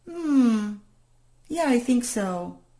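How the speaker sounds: slow, hesitant, unconvinced, half-hearted yes. Example of a client's incongruent yes: mock-hesitant, unconvinced yes. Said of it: "It doesn't sound congruent".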